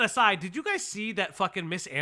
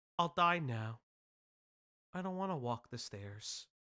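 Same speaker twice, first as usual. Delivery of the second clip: mock dramatic voice, lower pitch and quieter; 5 semitones lower, 9 dB quieter than usual. Mocking someone's dramatic pill talk, mocking put-on dramatic voice. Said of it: "do you just say it like this?".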